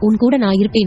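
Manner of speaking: ordinary delivery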